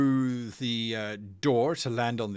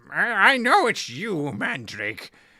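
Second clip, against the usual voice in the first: put-on shrill, loud old-woman voice shouting; 7 semitones higher, 5 dB louder than usual. A very old woman shuffles forward and shouts down the passageway: shouting old woman.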